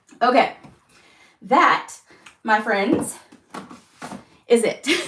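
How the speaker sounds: puffing, winded, short of breath. Wrapping up announcements to viewers, the speaker is out of breath. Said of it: "And I'm out of breath".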